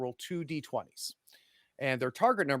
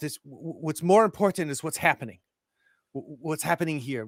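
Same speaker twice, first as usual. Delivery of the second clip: loud, put-on French accent; 3 semitones higher, 6 dB louder than usual. Retelling what a man said, in a put-on French accent. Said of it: "this is my wonderful French accent".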